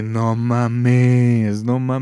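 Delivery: excited loud shout, mames stretched very slow. Recalling the halftime announcement while eating with parents, retelling a shout. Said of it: "Y yo grité".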